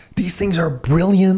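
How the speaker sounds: amazed, astonished tone.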